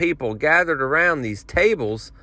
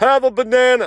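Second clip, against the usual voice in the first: insistent, loud, high bellowed yell; 9 semitones higher, 4 dB louder than usual. Retelling a banana vendor calling to the line: imitating a man yelling. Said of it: "he's yelling at me".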